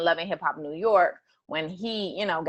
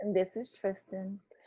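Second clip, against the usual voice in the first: low-key, muted, soft and subdued delivery; 2 semitones higher, 7 dB quieter than usual. Introducing himself at the start of the podcast, subdued. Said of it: "That was a subdued".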